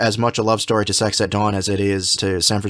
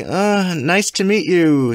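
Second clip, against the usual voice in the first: put-on speech through gritted teeth, higher; 8 semitones higher than usual. Recapping an awkward first introduction between two women, acting it out through clenched teeth. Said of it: "through clenched teeth".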